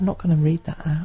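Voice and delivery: soft whispered aside.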